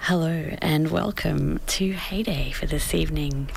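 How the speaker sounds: smooth, sultry, dulcet radio-host voice. Host welcoming listeners to heyday this evening, in a sultry, dulcet radio voice. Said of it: "You've got a very sultry, dulcet tone".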